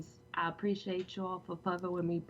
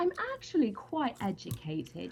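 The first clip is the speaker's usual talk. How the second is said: fake, sing-song British English accent; 4 semitones higher than usual. Answering people who think she can't speak properly: put-on english accent. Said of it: "She does the best English".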